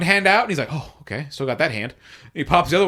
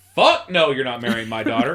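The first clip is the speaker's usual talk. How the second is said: offended, indignant king voice; 2 semitones lower than usual. Retelling the king refusing the marriage: offended king voice. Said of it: "He is like".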